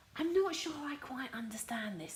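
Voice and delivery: soft, hushed, puzzled half-whisper. Showing your craft supplies, admitting you don't understand a tape, half-whispering. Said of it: "I'm whispering".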